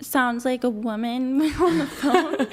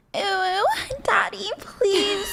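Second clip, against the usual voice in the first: put-on high-pitched babyish little voice; 7 semitones higher than usual. Egged on to show it, the speaker does the baby voice. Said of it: "do do do baby voice".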